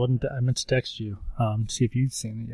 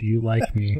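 normal talking voice

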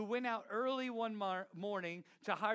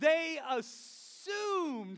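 long, stretched-out, elongated delivery with raised voice; 7 semitones higher, 6 dB louder than usual. Leading the audience to repeat a phrase together, in a long drawn-out voice. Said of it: "Say with a long voice".

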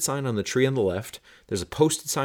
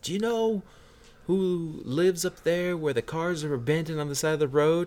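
high, raised, far-carrying yell; 8 semitones higher than usual. Retelling how a bar patron yelled a question down the bar: imitating someone yelling down a bar. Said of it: "he yells down the bar".

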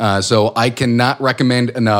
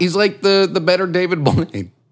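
breaking into laughter while speaking; 7 semitones higher than usual. Talking about goth celebrities, laughing while speaking. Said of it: "I couldn't even say that without laughing".

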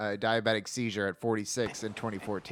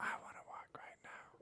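hushed whisper, quieter. Acting out the opening of a pitched documentary trailer: whispering. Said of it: "you hear a whisper".

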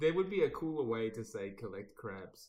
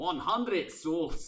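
put-on Scottish pirate voice, higher and louder; 6 semitones higher, 6 dB louder than usual. Quoting a game character's line in a Scottish accent: Davy Jones in a Scottish accent. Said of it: "so I can do it in a Scottish accent".

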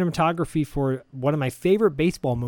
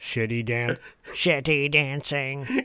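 mechanical robot voice. Voicing a killbot passing a party in a furniture store, Dalek voice. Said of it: "I love the Dalek voice that you're doing".

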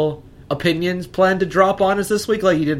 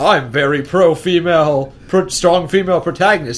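mocking, self-righteous put-on voice. Describing berating a man, the speaker repeats his claim, mocking imitation of him. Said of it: "saying like he's a fucking saint".

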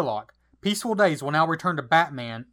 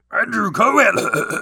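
loud, high monster voice, called out; 5 semitones higher, 5 dB louder than usual. Asked to read the next name this way, the speaker uses a Frankenstein monster voice. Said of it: "Do this next one in your Frankenstein voice".

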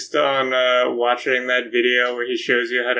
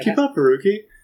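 offhand, casual, tossed-off higher voice; 8 semitones higher than usual. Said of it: "Do it, do it again".

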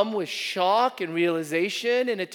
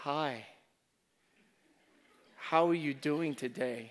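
put-on, very hushed, soft, tender voice; 5 semitones lower, 9 dB quieter than usual. A preacher recalls how his wife once greeted him on the phone: imitating Sunny's tender voice. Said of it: "with a tender voice actually say".

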